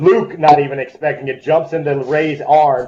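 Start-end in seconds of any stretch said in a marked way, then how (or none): none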